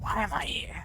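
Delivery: whispered, very quiet, hushed. Showing how the character might have answered: whispering. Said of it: "whispered that back to them".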